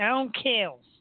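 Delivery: put-on high, cute little baby voice. Man showing how he talks to his wife, in a cute baby voice. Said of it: "be cute and talk like a baby".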